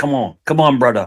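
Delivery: put-on friendly, urging Jamaican patois accent. Retelling what the cook said when asked for rare beef: imitating Cecil's Jamaican accent. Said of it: "he's Jamaican".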